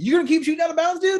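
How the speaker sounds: mock yelling, high-pitched. Retelling calling out to the ref during a paintball point: retelling yelling at the ref. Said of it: "I'm yelling at the ref".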